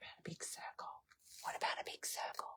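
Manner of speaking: hushed whisper. Thinking aloud while planning what to do next: whispering. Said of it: "Why am I whispering?".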